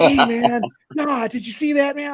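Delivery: giddy, amazed, excited chatter. Imitating a chat member's voice: imitating Bipolar Chris's excited voice. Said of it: "that guy's voice entertains me".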